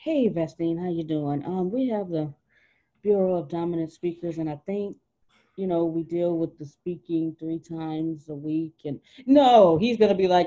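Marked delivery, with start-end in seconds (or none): 0.0-8.8 meek, insecure, unconfident voice. Pretending to phone a group about speaking, in a low self-esteem voice. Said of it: "You can hear the low self-esteem in my voice".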